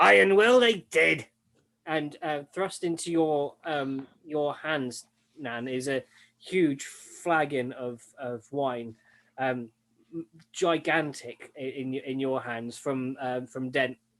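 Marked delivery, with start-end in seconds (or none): 0.0-1.2 very loud, resounding, booming, high raised voice. Narrating a voice the party hears after their rest, booming voice. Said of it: "booming voice, and it says".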